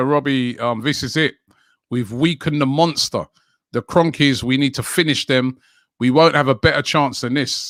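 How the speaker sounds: usual speaking voice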